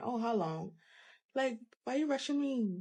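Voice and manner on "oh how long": acted-out huffy, impatient voice with huffing. Retelling a client rushing the lash appointment: imitating an impatient huffing client. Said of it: "you huffing and puffing and saying".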